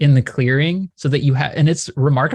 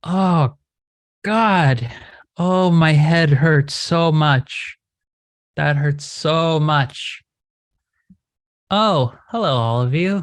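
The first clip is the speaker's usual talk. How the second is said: weary, grumbling creature voice, drawn out. Narrating a game, speaking as the Kelpie as it reforms: tired, disgruntled creature voice. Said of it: "tired, disgruntled voice come out of the Kelpie".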